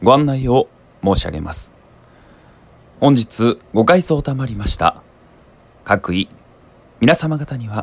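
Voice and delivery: dropped into a low, deep register. Demonstrating a lower voice they can also produce: low, deep voice. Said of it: "こんな感じの低めの声も出せたりします。".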